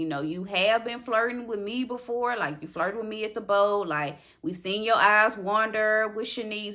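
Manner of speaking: ordinary delivery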